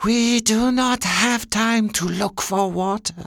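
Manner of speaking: strange, very high, flat monotone. A narrator reads a character's line to its master: odd, high-pitched, flat voice. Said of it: "the Aga said in its odd, high-pitched, flat voice".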